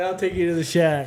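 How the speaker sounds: ordinary talk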